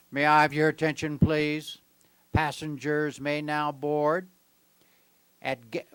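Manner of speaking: loud PA announcer voice. Giving the requested station call for the Super Chief: train station PA announcer's call. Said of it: "the P A system goes".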